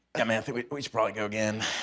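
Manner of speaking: soft, breathy speech riding out on exhale. Retelling what a castmate said after a take: imitating Duffy exhaling his words. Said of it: "he exhales his words. So he's like".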